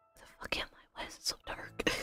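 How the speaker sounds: in a whisper. After the man snaps his fingers and your vision clears, whispering. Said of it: "I don't know why I'm whispering".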